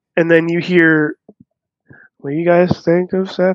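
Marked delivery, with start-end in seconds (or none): 2.2-3.6 distant voice from far across the room. Retelling a voice heard during a live show: imitating a far-away voice. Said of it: "it very far away".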